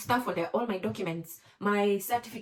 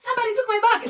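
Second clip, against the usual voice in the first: very high, frantic, panicked screaming with sobbing; 13 semitones higher, 10 dB louder than usual. Speaker retells her bag being stolen at immigration, retelling a frantic scream. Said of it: "You can tell how loud I am".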